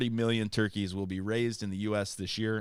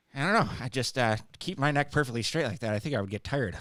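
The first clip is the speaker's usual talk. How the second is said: dead-honest, guileless, utterly sincere delivery; 3 semitones higher than usual. Retelling what Corey said while watching swans land: imitating Corey's most honest voice. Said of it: "in the most honest voice I've ever heard Corey say".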